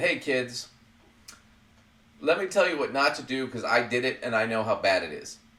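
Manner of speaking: ordinary delivery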